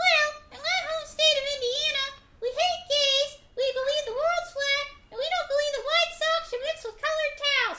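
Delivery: very high-pitched ventriloquist dummy voice. Ventriloquist has his dummy answer about his home state: ventriloquist dummy voice as Governor Dispense. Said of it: "show him some of your ventriloquism".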